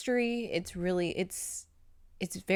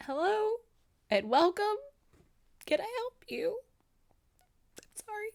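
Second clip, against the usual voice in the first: mock tearful, sobbing, very high crying voice. Retelling greeting a customer at a customer service job, imitating own crying. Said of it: "And I was crying".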